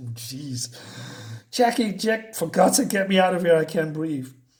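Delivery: laughing while talking. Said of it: "sorry, I'm cracking up".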